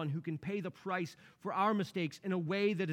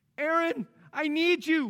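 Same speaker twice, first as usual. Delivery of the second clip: mock very high, drawn-out, panicked, desperate pleading cry; 10 semitones higher, 8 dB louder than usual. A husband recalls his wife calling on him, acting out her desperate cry. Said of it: "You could hear the desperation in her voice".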